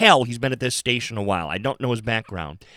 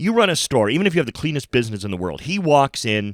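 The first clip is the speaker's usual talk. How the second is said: plain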